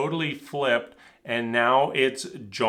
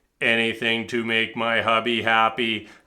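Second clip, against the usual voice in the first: totally deadpan, flat, robot-like delivery; 3 semitones lower than usual. Retelling what Bao said the morning after an argument, in Bao's mock deadpan robotic delivery. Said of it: "totally deadpan, totally robotic".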